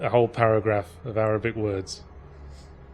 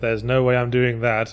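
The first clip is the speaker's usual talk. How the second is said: plain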